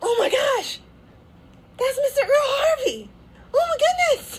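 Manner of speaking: high, loud starstruck gasp and squeal.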